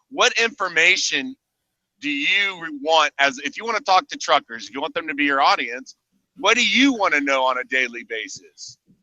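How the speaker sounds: ordinary talk, nothing marked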